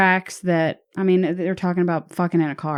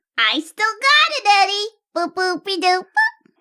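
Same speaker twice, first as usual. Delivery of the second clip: very high cartoon voice, swooping and bouncing. Asked by a co-host to prove it, the speaker does a Betty Boop voice. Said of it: "you can talk like Betty Boop".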